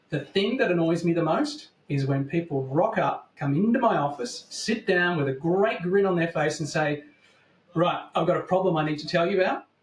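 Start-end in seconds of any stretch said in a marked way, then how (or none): none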